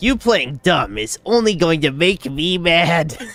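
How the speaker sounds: mock-serious, mocking reading voice. Reading out a game dialogue line he can't take seriously: mock-serious reading. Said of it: "I can't even read this shit seriously".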